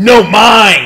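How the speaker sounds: put-on giant voice, shouting. Voicing a giant who looks straight at a player: shouting giant character voice. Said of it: "he goes".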